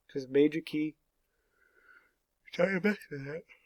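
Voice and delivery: words stretched while yawning. Giving a sight-reading assignment for the weekend, yawning while talking. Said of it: "I'm yawning in your face".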